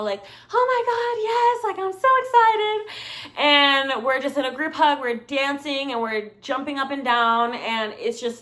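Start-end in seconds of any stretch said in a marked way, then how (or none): 0.5-3.9 mock very high, very slow, drawn-out, tipsy, excited gushing. Retelling a night out with friends, imitating drunk excitement. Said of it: "we're all shit-faced".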